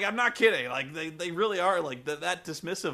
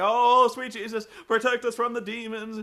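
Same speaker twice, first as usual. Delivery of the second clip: high, raised voice calling out in prayer; 5 semitones higher, 5 dB louder than usual. Speaker retelling what a woman burning candles said, imitating someone praying. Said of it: "and like praying".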